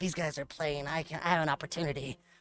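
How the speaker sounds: scheming, plotting inner voice. Voicing the pet's thoughts as it scouts the kitchen: imitating a scheming pet. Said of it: "She's like".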